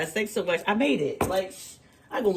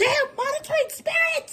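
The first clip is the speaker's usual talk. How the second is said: put-on very high outcry. Retelling finding the creamer empty: imitating her own yell. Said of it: "I yelled out".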